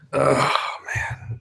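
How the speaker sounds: deflated, glum, breathy half-whisper. Answering how everybody is doing, sounding down. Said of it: "that didn't sound too good".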